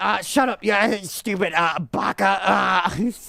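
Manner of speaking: tense, strained put-on voice. Showing a character voice that kills the throat, in a throat-straining Natsuki voice. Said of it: "their voices kill my throat".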